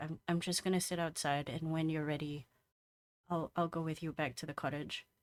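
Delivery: soft half-whisper under the breath. Heading out, she answers Valerius's half-whispered offer of an escort, half-whisper. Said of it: "she whispers back".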